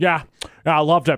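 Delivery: loud gum-chewing voice. Retelling a text as an impression, chewing gum: Jason Sudeikis impression, chewing gum. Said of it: "Bill Hader's impression of Jason Sudeikis is he's always chewing gum".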